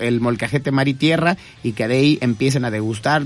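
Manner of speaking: plain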